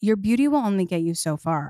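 put-on deadpan delivery. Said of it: "dead face".

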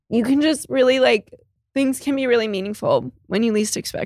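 speaking through tears. Talking to a loved one who is not there with them, crying while talking. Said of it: "I hate that you're crying".

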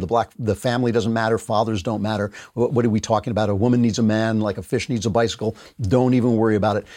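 ordinary talk

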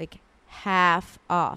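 half drawn out, slow and heavy. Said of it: "That's, like, half off".

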